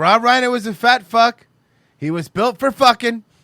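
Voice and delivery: very loud, high-pitched, belted-out delivery. Deliver a comment from Debo Money about Rob Reiner, in a Trump voice. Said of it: "in Trump's voice".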